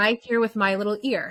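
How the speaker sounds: plain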